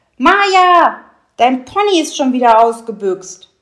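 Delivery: very loud, booming drill-sergeant bellow, drawn out. Narrator reads a character calling out to Maja about her pony, bellowed like a drill sergeant. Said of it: "brüllte dann in einem Ton, der jedem Feldwebel zur Ehre gereicht hätte".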